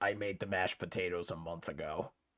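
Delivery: weird, low, very quiet crabby mutter. Retelling what a woman told the people eating her meal: imitating a weird crabby voice. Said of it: "like apparently weird crabby voice".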